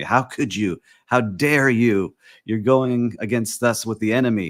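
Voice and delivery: indignant, outraged, accusing outcry. Retelling how hotel people reacted to a short-term rental company: imitating hotel people screaming. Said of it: "Hotel people started screaming at me".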